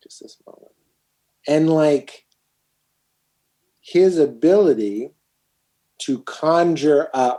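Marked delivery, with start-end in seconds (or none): 0.0-0.7 put-on slow, quiet, repeated murmur with long pauses. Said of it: "and a pause".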